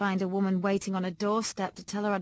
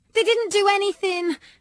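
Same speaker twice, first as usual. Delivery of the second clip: desperate, frantic, very high-pitched, raised voice; 12 semitones higher, 8 dB louder than usual. [name] answers Dad's questions about these girls, frantic. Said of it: "I said frantically".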